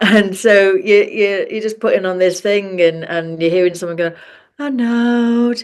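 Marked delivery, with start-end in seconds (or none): 4.6-5.6 eerie, creepy, floating meditation-tape voice, drawn-out "no". Mimicking a YouTube meditation someone puts on, imitating a creepy floaty voice. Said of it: "a really creepy floaty voice".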